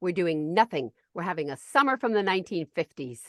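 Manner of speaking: put-on curt, snapping tone. Quoting a woman's reply when the speaker asked her, retelling a curt snap. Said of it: "she snapped".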